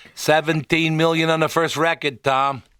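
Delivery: put-on clumsy Boston accent. Repeating a guest's line back to him: bad Boston accent imitating Barry. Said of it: "you didn't do very good with the accent".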